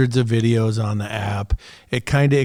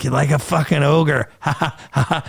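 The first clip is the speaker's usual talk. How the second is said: put-on laughing, higher; 4 semitones higher than usual. Retelling how a coworker teased him, imitating the coworker's laugh. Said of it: "That's how he laughed".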